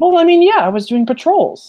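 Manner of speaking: put-on high, loud child voice, sounding defensive.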